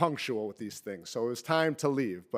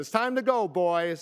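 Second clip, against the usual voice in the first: mock yelling, high hollering call; 5 semitones higher, 4 dB louder than usual. Retelling a family story, mom calls the boys to leave: imitating mom yelling. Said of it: "my mom is yelling".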